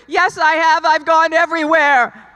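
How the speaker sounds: mock insistent arguing. Speaker retelling arguing back at a voice they heard, retelling arguing back. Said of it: "I'm arguing with it".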